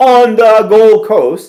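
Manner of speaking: loud, slow mock yell in full capitals.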